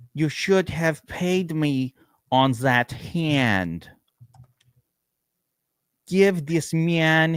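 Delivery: mock Russian accent. Quoting a Rounders scene, John Malkovich Russian impression. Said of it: "my impersonation of John Malkovich impersonating a Russian".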